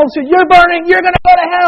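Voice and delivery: loud, high fire-and-brimstone hellfire preacher yelling. Recalling fire-and-brimstone preachers at The Wall in college, retelling preachers yelling. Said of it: "They're yelling".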